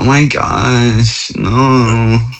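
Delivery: put-on California Valley girl accent, no drawn out. Speaker imitating his wife's american voice, valley girl accent. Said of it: "it's always like a Valley girl".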